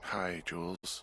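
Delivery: groggy, sleepy, just-woken tired voice. [name], woken to pick up the radio, greets Jules, tired voice. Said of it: "you sound tired".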